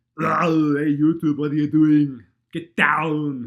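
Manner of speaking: very loud, high-pitched, booming character voice. Asked whether the legendary voice intros will return, greet YouTube in an Arnold voice. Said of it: "the legendary Arnold's voice intros".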